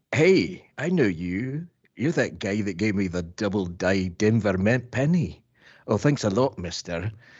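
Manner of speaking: put-on Scottish accent with round vowels. Asked by the others to do a Scotsman, performing a bit in a Scottish accent. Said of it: "And I have Scottish".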